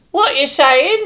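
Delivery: piercing, shrill, very high-pitched, rushed voice. Narrating the morning, the speaker calls up the stairs to Julia in a shrill voice. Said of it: "ask in a shrill voice".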